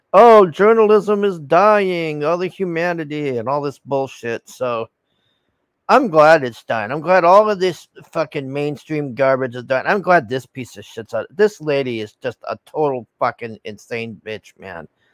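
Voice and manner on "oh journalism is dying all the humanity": acted sobbing, high, tearful, crying lament. Mocking a woman crying over dying journalism: imitating someone crying. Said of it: "she's on here crying about it, going".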